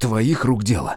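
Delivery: breathless, gasping angry growl, choking with rage. Rudnev seizes his companion by the chest and shakes him: breathless angry growl. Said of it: "задыхаясь от злости, прорычал он".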